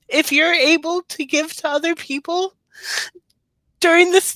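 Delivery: choked-up voice. The speaker, apologizing to listeners, holding back tears. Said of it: "I'm trying not to cry".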